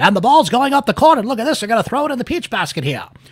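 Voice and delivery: high, vintage radio play-by-play announcer voice. Calling a basketball game, the speaker slips into an old-timey radio announcer voice. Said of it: "my old-timey radio voice".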